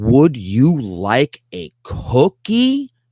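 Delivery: very slow, patronizing, sing-song drawl. Showing how teachers talk down to learners: condescending exaggerated slow speech. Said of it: "to say something really obnoxious like".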